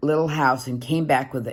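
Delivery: plain reading voice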